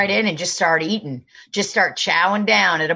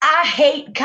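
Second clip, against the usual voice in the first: pitched-up, very specific, peculiar speaking inflection; 8 semitones higher than usual. Retelling what Kenny says about comedy: imitating Kenny. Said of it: "I'm trying to talk like Kenny".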